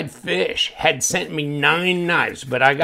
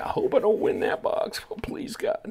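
hushed, breathy, whispered pleading under the breath; 9 semitones higher, 8 dB quieter than usual. Imitating people praying not to win the box: imitating someone praying. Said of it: "people are starting to pray".

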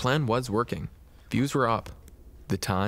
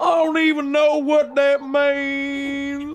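very high, loud, shrill, slow exaggerated mocking; 9 dB louder than usual. Continuing the imitation game with another speaker: exaggerated mocking impression. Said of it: "This is you imitating me".

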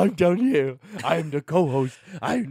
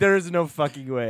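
usual speaking voice

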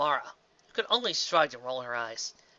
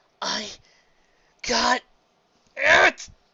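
very high, strained, forced through clenched teeth; 9 semitones higher, 7 dB louder than usual. A trainee lifting a massive rock answers her partner, through gritted teeth. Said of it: "She said through gritted teeth".

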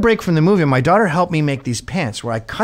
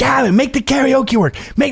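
put-on scream, higher; 9 semitones higher than usual. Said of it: "they're screaming at me".

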